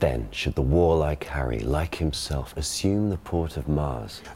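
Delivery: read in modern received pronunciation.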